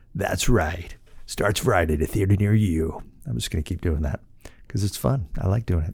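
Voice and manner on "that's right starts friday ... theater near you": put-on movie-trailer announcer voiceover. Podcast host playing with his show's intro, in a movie-trailer announcer voice. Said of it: "in this announcer's voice".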